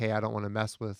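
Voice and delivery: ordinary delivery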